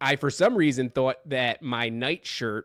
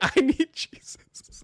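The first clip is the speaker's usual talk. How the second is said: mock, very high, frightened, terrified squeal; 13 semitones higher than usual. Retelling how the daughter woke up: retelling a terrified scream. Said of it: "starts screaming".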